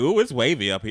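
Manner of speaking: ordinary talk, nothing marked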